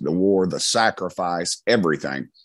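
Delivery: plain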